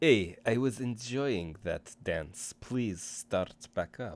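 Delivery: put-on speaking with Eastern European accent. Voicing her line to someone who stopped dancing: Eastern European accent. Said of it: "she's got an Eastern European accent".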